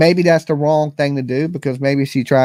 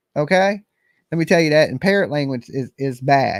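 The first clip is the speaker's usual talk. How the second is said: ordinary talk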